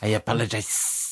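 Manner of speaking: thick, heavy put-on Latin accent. Repeating the other speaker's apology: imitating thick Latin accent. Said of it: "you just have a really thick Latin accent".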